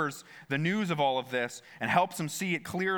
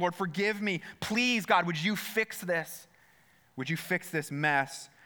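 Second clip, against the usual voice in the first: put-on pleading cry, crying out; 3 semitones higher than usual. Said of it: "he's crying out".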